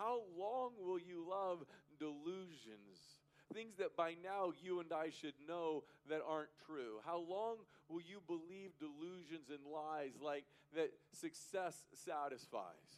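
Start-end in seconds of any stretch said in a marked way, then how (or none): 0.0-3.2 play-acted fed-up, exasperated voice. Speaker retells the psalmist's question to listeners, mock-exasperated. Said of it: "with his exasperated voice".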